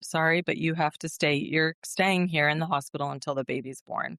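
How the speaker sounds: normal talking voice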